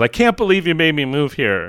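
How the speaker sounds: put-on child voice hollering, swooping and upset. Retelling what he yelled at home after the move: retelling a yell. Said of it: "He yells".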